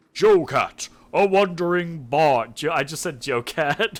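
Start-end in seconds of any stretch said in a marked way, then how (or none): 0.1-2.5 booming, slow, grand puppet voice. Voicing a dragon glove puppet on his hand as it introduces itself: deep, booming voice. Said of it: "ventriloquizes in a deep, booming voice".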